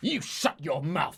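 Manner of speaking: hissing reply in a bird-man voice. Narrator voices a birdman answering the birdmaid's objection: hissing. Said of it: "the birdman hisses back".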